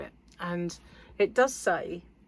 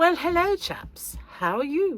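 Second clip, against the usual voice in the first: exaggerated put-on plummy English accent, very high; 10 semitones higher, 4 dB louder than usual. Greeting viewers in a video, in a put-on english accent. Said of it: "I thought I'd just be a bit more English".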